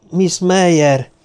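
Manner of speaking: groaning with relief. Hearing someone approach, a character calls out a name, relieved groan. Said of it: "nyögte megkönnyebbülve Karahan".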